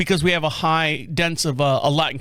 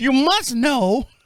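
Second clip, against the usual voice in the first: high, put-on elderly lady voice, pressing; 8 semitones higher than usual. Retelling one lady insisting to a man who says he doesn't work there, imitating an old lady. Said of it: "there's one lady goes".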